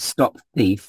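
normal talking voice

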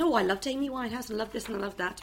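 ordinary delivery

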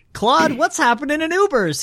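very high-pitched, sarcastic tone. Starting the tier segment by asking the other speaker a question: sarcastic. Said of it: "he says sarcastically".

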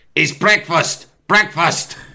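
high, calling-out train attendant voice. Retelling how the train attendant woke passengers: imitating the train attendant calling breakfast. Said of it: "The geezer would go like this".

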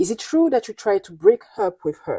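ordinary delivery

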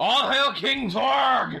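yelled rallying cry. During a dice-game attack, a player shouts a battle cry.

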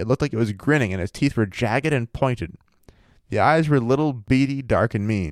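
usual speaking voice

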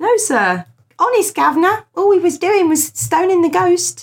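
terrible put-on Cockney. Joking cover story told to a sir, terrible cockney accent. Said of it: "It was a terrible Cockney accent".

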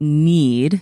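stressing the word need. Speaking to the audience, stressing the word need. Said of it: "emphasis on need".

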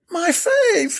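piercing, very high, shrill squeal. [name] responds as Natasha shows her the bottle, squealing. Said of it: "squealed [name]".

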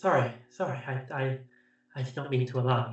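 timid, apologetic, meek and sheepish. A figure hiding in a corner apologizes to the person who found her: sheepish. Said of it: "looking quite sort of like sheepish".

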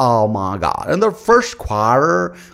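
fake American accent, loud and high. Criticizing presenters who speak with an accent, the speaker mocks it: mock accent. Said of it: "speak with an accent like".

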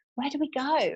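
mock, high-pitched screamed line. Telling a story, quoting what the speaker's sister screamed, imitating someone screaming. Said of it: "screamed at me again and said".

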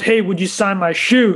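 normal talking voice

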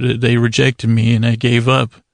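ordinary talk, nothing marked

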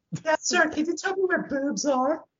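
put-on very high childlike woman voice. In a role-play, asking a man a question in a put-on woman voice. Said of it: "my woman voice sounds exactly like a kid's voice".

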